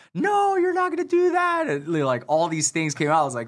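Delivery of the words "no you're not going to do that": very high-pitched, tearful crying yell. Retelling how a woman yelled and cried at them, imitating someone yelling while crying. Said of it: "she's just yelling like for anything and just crying".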